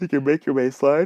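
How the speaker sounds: talking through a yawn. Speaker explaining to listeners, interrupted by a yawn: yawning while talking. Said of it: "I'm just yawning and everything today".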